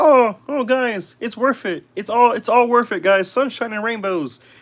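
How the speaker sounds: high-pitched little frog puppet voice. Talking to viewers about expensive figures; Kermit voice. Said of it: "that Kermit voice".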